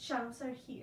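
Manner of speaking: plain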